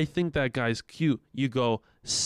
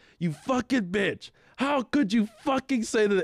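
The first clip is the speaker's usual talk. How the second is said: put-on loud outburst, high and furious yelling; 8 semitones higher than usual. Retelling how a friend yelled at a guy after a crash: imitating a friend yelling. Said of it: "my friend is very loud".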